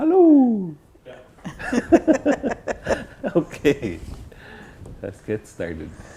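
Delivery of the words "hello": high, proud owl voice. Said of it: "Does my volume sound good when I'm saying".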